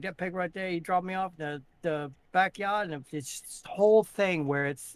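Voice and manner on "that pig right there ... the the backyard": put-on Maine accent, fast and slurred. Telling a Maine joke, voicing the farmer: fast Maine accent with a slur. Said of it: "it's a fast-spoken, but with a slur".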